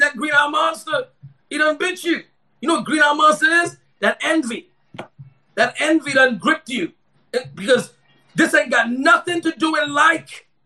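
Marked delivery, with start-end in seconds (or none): 0.0-2.2 needling, sarcastic, rebuking tone. Retelling what he says to people, imitating a sarcastic rebuke. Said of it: "I'm sarcastically rebuking them".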